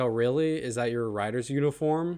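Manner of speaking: usual speaking voice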